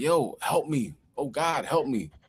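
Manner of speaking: acted-out desperate, slow, drawn-out cry. Retelling how someone attacked by a shark screamed: imitating someone screaming for help. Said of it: "and he's screaming like".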